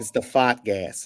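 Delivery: Boston accent, spoken slowly. Showing how a phrase has to be said, in a Boston accent. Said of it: "you have to like say it with a like Bostonian accent".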